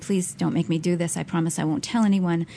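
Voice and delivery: put-on crying and begging. Recalling begging the man at his feet, retelling crying and begging. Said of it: "crying and saying".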